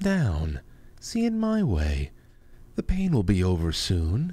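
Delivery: put-on lovey-dovey voice, swooping and sing-song. The speaker acts out a man's creepy talk, imitating his 'I love you' voice. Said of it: "that I love you voice".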